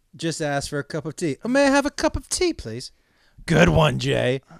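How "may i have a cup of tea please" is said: tiny, very high-pitched English accent. Showing the accent the other speaker compared to Oliver Twist, Oliver Twist English accent. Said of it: "your English accent sounded like that Orphan Oliver twist".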